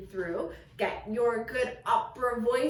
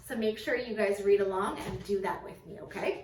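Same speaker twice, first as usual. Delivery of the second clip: usual speaking voice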